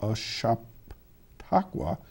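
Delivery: very slow, breathy, half-whispered, drawn out word by word. Speaker relaying a Chamber of Commerce reminder to listeners: said very slowly. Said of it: "now I'm going to say it real slow".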